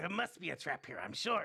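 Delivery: put-on cartoon goblin character voice. Acting out what the group is thinking, in a goblin voice. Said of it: "In a goblin voice".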